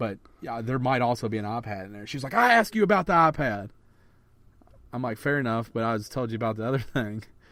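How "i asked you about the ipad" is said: acted-out, high-pitched screaming. Retelling an airport bag check, imitating the woman screaming at the speaker. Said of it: "And she's screaming at me".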